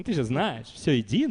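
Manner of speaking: nasal, whiny drone dripping with sarcasm. An interpreter retells what Chaitanya said behind Murari Gupta, in a put-on nasal, whiny, sarcastic voice. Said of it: "таким гнусным, занудным голосом, саркастическим".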